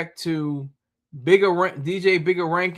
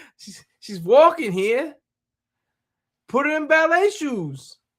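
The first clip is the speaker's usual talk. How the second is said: bad, fake, very high Italian accent; 9 semitones higher, 3 dB louder than usual. Speaker quotes what others said about a woman, terrible Italian accent. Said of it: "for doing a terrible Italian accent".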